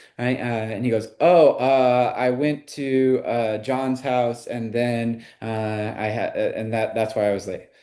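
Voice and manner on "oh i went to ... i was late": slow, halting, stammering speech full of fillers. Acting out a boyfriend explaining why he came home late, acting hesitant and stuttering. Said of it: "I just kind of like stuttered a little bit".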